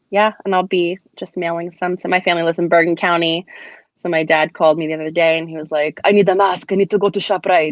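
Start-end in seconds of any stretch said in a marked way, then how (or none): 6.0-7.7 put-on Greek-accented voice. Retelling a phone call from dad: imitating dad's greek accent. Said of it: "what accent is that that you just used there?".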